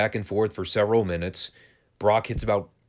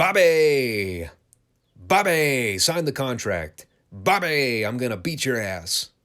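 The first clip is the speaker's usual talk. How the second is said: name dragged out, very slow and drawn out; 3 semitones higher than usual. Talking about the Lesnar-Lashley match, mimic how Brock says Bobby's name in a Brock Lesnar impression. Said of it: "Brock's pronunciation of Bobby's name".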